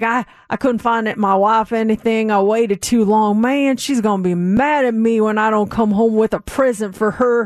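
put-on heavy Texas accent, broad vowels, laid on thick. Retelling a stranger overheard at the airport, the speaker does a thick Texan accent. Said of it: "he's got his thick Texan accent".

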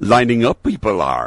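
wise, ancient alien creature voice. Chatting about Dean's musical, doing a Yoda impersonation. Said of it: "That's my Yoda impersonation".

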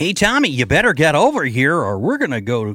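generic swooping nerdy Yankee voice. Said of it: "it's a nerdy, Yankee kind of voice".

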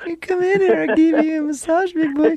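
badly faked woman's voice, pitched very high. Teasing the other man about being scared of Susan, bad fake Susan voice. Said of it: "that's the worst woman's voice I've ever heard".

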